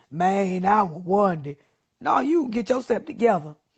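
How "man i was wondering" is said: put-on slow, mumbling young male voice, slangy delivery. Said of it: "That's how they be talking".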